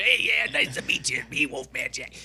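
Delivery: showing-off, boastful, star-like delivery. Retelling a friend's story of a celebrity entering a record store: Wolfman Jack impression. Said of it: "he could not be more Wolfman Jackie".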